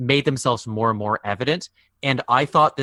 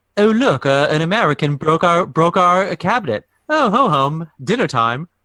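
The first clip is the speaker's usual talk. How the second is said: loud put-on English accent; 5 semitones higher, 6 dB louder than usual. Acting out how everyone reacts in the scene, put-on English accent. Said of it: "That's my English accent".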